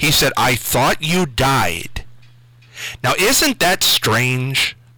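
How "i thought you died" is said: put-on shocked little boy voice, much slower. Retelling what a little 3-year-old boy said to the speaker, acting out shock. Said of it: "With just shock in his voice".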